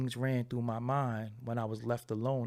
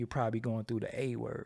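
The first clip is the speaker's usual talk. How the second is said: usual speaking voice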